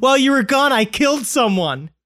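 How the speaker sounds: breezy, carefree tone. A psychiatric hospital worker retells a patient's remark, imitating a lighthearted tone. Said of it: "in a very lighthearted voice".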